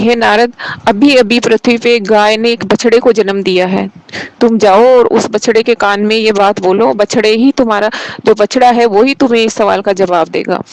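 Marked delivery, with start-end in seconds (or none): none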